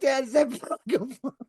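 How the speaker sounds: put-on loud shout. Retelling a question shouted in a theater that made everyone laugh, retelling a loud outburst. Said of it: "it was loud".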